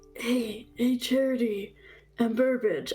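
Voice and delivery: hushed voice. Sending a secret magic message to party members: whispering. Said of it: "I'm whispering into my message thing".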